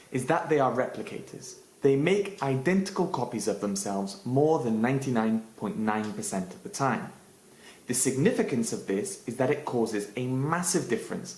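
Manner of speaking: plain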